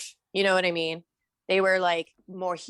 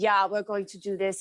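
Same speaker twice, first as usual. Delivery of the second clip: put-on heavy, laid-on German accent. Retelling how the artist spoke on set: Giger German accent. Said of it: "in all this German accent".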